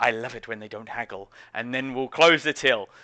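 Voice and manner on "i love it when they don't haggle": under-breath mutter, much quieter. Game master voicing a shopkeeper closing the sale, muttered under breath. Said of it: "she will say under her breath".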